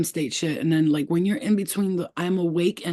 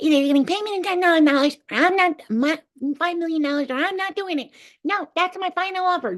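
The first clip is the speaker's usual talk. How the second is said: very high-pitched, elf-like voice; 11 semitones higher than usual. Retelling a haggle with a huge alien: talking like an elf. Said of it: "I was talking like an elf".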